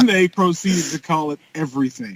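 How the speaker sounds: plain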